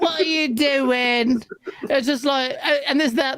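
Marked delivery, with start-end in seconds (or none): 0.0-1.4 mocking English voice acting. Mocking a game's English voice acting: mocking English game voice acting. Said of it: "I don't like the English voice acting".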